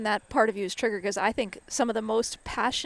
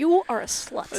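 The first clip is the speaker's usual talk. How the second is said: normal talking voice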